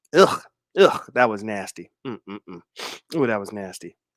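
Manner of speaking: coughing fit, then low, winded, catching breath.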